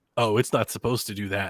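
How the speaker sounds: put-on deadpan delivery. Retelling a story, the speaker repeats what he told her, retelling a deadpan reply. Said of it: "as stone faced as I could".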